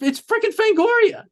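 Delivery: overwhelmed with excitement, gushing, high and giddy.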